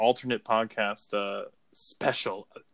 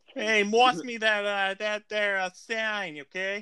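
put-on Boston accent, very high and drawn out; 10 semitones higher than usual. Joking that the phrase sounds like Boston, then saying it: put-on Boston accent. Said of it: "sounds like something at Boston".

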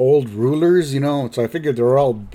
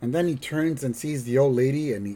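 plain

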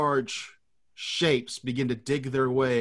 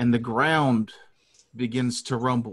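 plain

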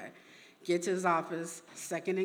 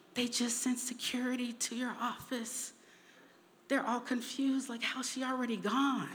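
hushed, high half-whispering stage whisper; 6 semitones higher, 4 dB quieter than usual. Retelling a friend's phone call about security at the office: imitating a half-whisper. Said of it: "she's whispering".

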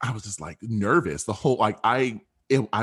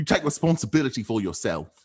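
poorly done, fake British accent; 2 semitones higher than usual. Speaker repeating a quoted line, in a bad british accent. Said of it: "I sound terrible".

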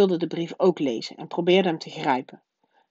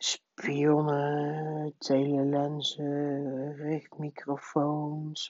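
distracted, wild muttering under the breath; 2 semitones lower, 8 dB quieter than usual. An uncle answers his wife's questions, muttering wildly. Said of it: "mompelde oom Herman verwilderd".

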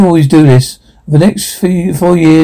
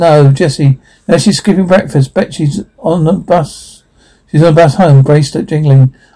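ordinary delivery

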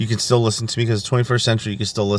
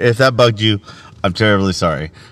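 ordinary talk

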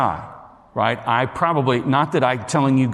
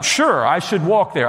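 dry, sarcastic agreeing tone; 5 semitones higher than usual. Speaker retells answering a man who told him to walk there, retelling own sarcastic reply. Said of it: "he catches the sarcasm in my voice".

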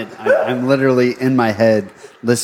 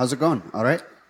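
speaking with an Irish-sounding accent; 6 dB quieter than usual. In an accent game, a contestant says the first phrase, accent that sounded irish. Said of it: "That definitely sounded Irish".

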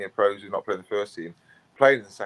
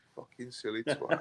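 put-on deadpan delivery, quieter; 3 semitones higher, 8 dB quieter than usual. Recalling someone's reaction after being stumped: retelling a deadpan remark. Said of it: "It's a bit like deadpan looked at me and was like".

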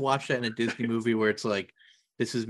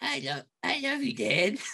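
very high, squeaky cartoon voice; 13 semitones higher, 3 dB quieter than usual. Answering a request to do Bart saying the line: Bart Simpson impression. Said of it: "Do your best Bart saying".

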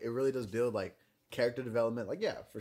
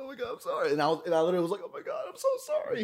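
mock tearful tone, higher and louder; 9 semitones higher, 5 dB louder than usual. Retelling a fight at a birthday party, imitating own crying apology. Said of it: "'cause I'm crying".

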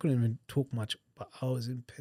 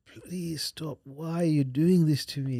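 mock groggy drunk-sounding pleading, higher and louder; 4 semitones higher, 5 dB louder than usual. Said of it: "probably sound like a drunk or something".

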